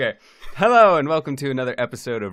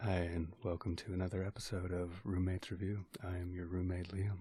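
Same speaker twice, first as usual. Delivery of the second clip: very soft, hushed ASMR whisper; 6 semitones lower, 19 dB quieter than usual. Suggesting an ASMR-style opening for the roommates' show, in an ASMR-style delivery. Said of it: "like an A S M R kind of thing".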